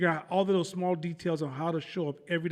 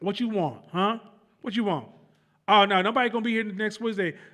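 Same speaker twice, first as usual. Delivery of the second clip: acted rude gum-chewing voice, louder; 3 semitones higher, 4 dB louder than usual. Acting out a rude receptionist on a company phone call: acting out a rude gum-chewing receptionist. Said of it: "I'm chewing gum like".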